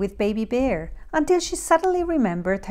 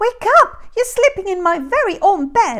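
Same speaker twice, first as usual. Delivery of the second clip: tiny, very high, squeaky bear voice; 9 semitones higher, 6 dB louder than usual. Narrator reading Goldilocks, the very small bear wakes her: squeaky small bear voice. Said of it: "squeaked the very small bear".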